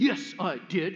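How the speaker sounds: put-on indignant, defensive, childlike insistence. Retelling a little brother's reply to his sister: imitating an indignant, defensive child. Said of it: "very indignantly and somewhat defensively".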